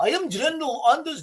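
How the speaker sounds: fumbled, high Norwegian accent. Retelling what a general said, as Anders Jernberg in a bad Norwegian accent. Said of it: "I can't do the Norwegian accent".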